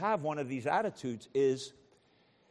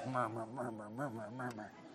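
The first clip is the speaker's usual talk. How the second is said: low, soft muttering under the breath. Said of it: "you mutter to yourself under your breath".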